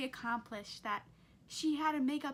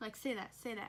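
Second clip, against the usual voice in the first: ordinary talk, nothing marked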